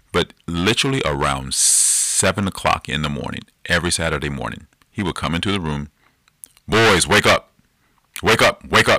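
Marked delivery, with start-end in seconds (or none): 6.6-9.0 boisterous, big, booming dad holler. Retelling dad waking the boys every Saturday morning, big, boisterous voice. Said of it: "In this big, boisterous voice of his".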